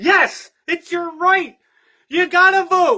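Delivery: angry, high, loud group shouting. Retelling how classmates shouted down a kid's question: imitating classmates shouting. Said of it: "four or five of his classmates shouted him down".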